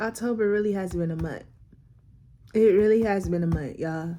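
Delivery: low voice, fighting back tears, close to crying. Speaker recording a video, trying not to cry, holding back tears. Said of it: "I'm trying to do this video without crying".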